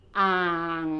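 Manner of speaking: อ่าง pronounced and held on a low tone. Teaching thai tones with a first-syllable example: low tone on 'อ่าง'. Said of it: "We say it in the low tone".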